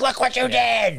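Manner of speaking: play-acted frantic, high-pitched freaked-out outburst. Retelling a movie character's scene in line, imitating someone freaking out. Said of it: "freaking out".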